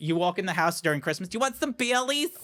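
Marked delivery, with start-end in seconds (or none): 1.3-2.3 put-on voice, pitched higher. Imitating own mother offering a drink at Christmas: imitating a Long Island mother. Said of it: "that's my mother".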